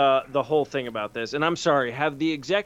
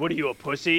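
comic-book villain character voice. Acting out a comic scene, taunting Batman as Venom: Venom voice. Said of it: "then the Venom would be like".

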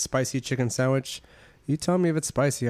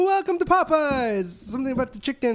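mock lively, animated voice, higher; 13 semitones higher, 3 dB louder than usual. Retelling a fast-food worker's greeting at the drive-up: imitating an animated employee. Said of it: "fucking animated as shit".

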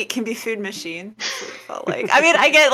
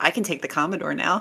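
mock-deadpan delivery, quieter; 4 semitones lower, 5 dB quieter than usual. Retelling what Pete said while looking at the model shelf, imitating Pete's deadpan. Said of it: "Just deadpan".

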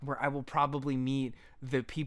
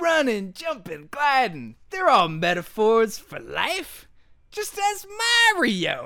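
loud, high, swooping mascot voice; 9 semitones higher, 11 dB louder than usual. Reading an interview excerpt, answering a reporter in a Bubsy impression. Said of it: "I'm going to do my best Bubsy impression here".

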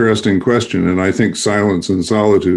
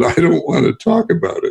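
put-on small, squeaky preteen kid voice; 9 semitones higher than usual. Recalling answering an instructor below, the speaker retells their reply: squeaky preteen voice. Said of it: "squeaky little, preteen voice came up in me".

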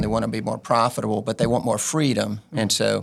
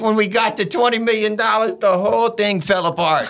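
put-on Cajun accent, higher; 11 semitones higher, 4 dB louder than usual. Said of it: "he didn't say it with that accent".

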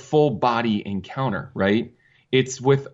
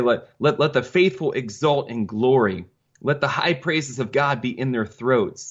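usual speaking voice

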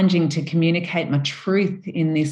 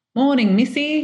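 high-pitched, put-on British accent; 9 semitones higher, 3 dB louder than usual. Retelling an old field worker tipping his hat to her, in a british accent. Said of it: "it seemed to me like it was in a British accent".

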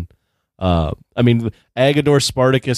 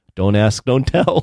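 muttered under the breath, slower. Recounting a scene with a quip from one actor, retelling an under-breath aside. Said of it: "Hank Azaria under his breath goes".

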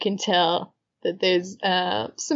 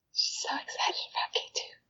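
soft, quick playful whisper. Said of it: "Raquel is just whispering".

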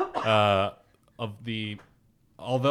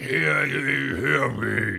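assumed deep rasping crocodile voice; 3 semitones higher than usual. Imitating the crocodile announcer calling out news: Admiral Ackbar voice. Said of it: "he was like Admiral Akbar".

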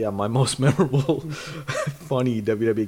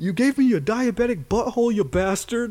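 livid outburst, pitched very high, shrill, drawn out; 10 semitones higher than usual. Recounting a moment when she was furious, the speaker does a retelling of a livid outburst. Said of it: "I was so livid".

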